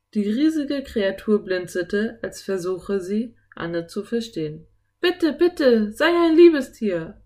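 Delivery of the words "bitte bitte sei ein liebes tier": high, loud, begging, pleading cry. Someone calls out to a giant kraken to let them go: calling out. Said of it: "rief Anne".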